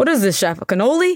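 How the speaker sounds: put-on hard New Jersey accent. Speaker recalls an Irish Jersey man teasing the pan dulce at brunch, hard Jersey accent. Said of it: "he had a hard Jersey accent".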